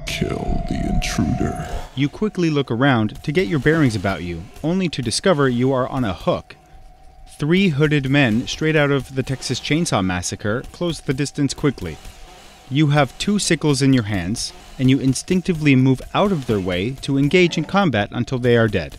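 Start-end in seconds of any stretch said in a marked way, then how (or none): 0.1-1.7 slow, whispered, ominous voice. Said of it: "You hear an ominous voice say".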